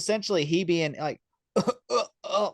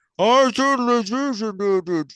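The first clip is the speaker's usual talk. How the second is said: smothered, muffled by mask, pitched up, loud; 5 semitones higher, 5 dB louder than usual. Retelling how the mask made the voice sound: imitating a mask-muffled voice. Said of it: "I took off my mask because it was muffling my voice".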